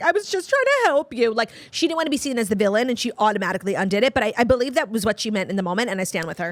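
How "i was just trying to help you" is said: put-on weepy, high, tearful crying plea. Discussing a show, a speaker acts out what Huda said, imitating Huda crying. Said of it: "so here's Huda crying".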